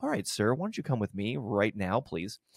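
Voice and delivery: soft, calm, soothing voice. After running an ECG, asking the patient to come along right now, calmly. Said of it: "Very you calm".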